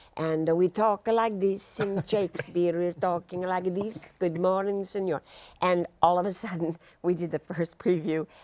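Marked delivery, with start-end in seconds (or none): 0.6-5.2 coached, put-on stage Italian accent. An actor shows how the cast was coached to talk in a Shakespeare play: Italian accent. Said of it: "coached in Italian dialects".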